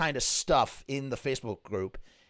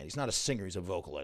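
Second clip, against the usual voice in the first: plain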